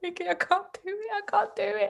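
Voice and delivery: mock tearful, very high, pleading crying voice. Recounting giving birth, the speaker acts out her past self crying to Vicky. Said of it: "I was crying".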